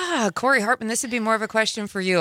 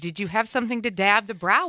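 usual speaking voice

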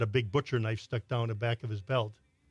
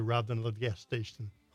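ordinary talk

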